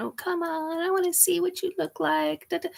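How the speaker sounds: put-on high, pleading voice like a small child. Retelling begging to be shown someone: imitating own childish begging. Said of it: "did that little kid thing of begging and pleading".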